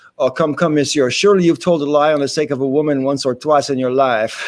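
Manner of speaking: normal talking voice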